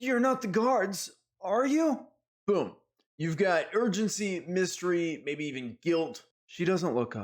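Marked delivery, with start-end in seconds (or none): 0.0-2.1 high, frightened, startled, panicked voice. Showing how a game master voices a character who looks up suddenly: panicked. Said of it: "He looks up quick, panicked".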